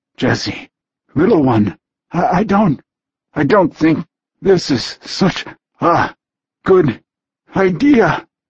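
strangled tortured hiss. Narrator voices a man speaking to a woman, hissed out in a tortured voice. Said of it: "he hissed out in a tortured voice".

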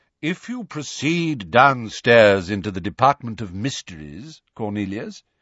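ordinary delivery

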